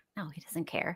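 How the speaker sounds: very quiet, barely voiced whisper. A guest on the show answers the host's warning about her husband, whispering. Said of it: "You have to talk louder than that".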